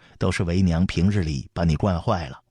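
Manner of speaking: ordinary delivery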